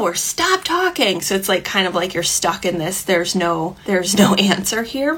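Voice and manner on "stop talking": put-on high, slow, upset, demanding child voice. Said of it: "they're like".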